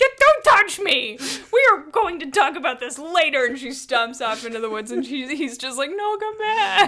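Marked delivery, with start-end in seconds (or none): 0.0-3.5 put-on, furious, high, loud angry yell. Retelling a couple's argument, imitating the woman yelling at him. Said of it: "yelling at him about".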